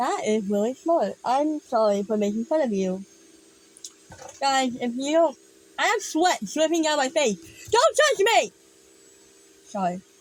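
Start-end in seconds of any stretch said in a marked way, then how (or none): 7.7-8.5 very high-pitched, shrill yell. Dripping with sweat, the speaker tells the guys around them off, yelling. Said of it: "I didn't mean to yell at you".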